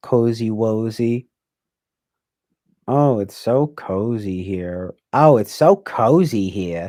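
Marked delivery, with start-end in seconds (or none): 2.9-6.9 loud, slow, put-on old Bronx lady voice.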